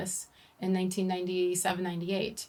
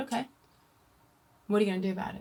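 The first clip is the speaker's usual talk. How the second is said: put-on flat monotone, faster. Speaker retells the parents' reply, imitating dad's monotone. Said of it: "who's always very much like this, monotone".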